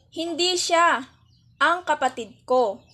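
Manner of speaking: clear, brief pause right after siya. Lesson on pauses changing meaning in Filipino: pause after siya. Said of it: "Dito naman inilagay ang antala pagkatapos ng salitang siya".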